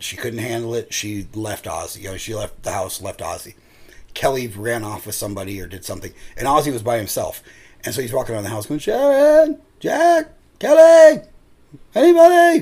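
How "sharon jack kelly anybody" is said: very high, very loud, very slow drawn-out yelling. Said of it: "He's yelling".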